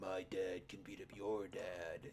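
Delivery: gravelly villain voice, very low and very slow. Imitating a game boss's expected line: imitating a gravelly game villain voice. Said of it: "in that gravelly voice".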